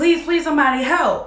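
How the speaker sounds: acted desperate scream. Retelling how he got out of the car and screamed for help: retelling a scream for help. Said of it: "start screaming".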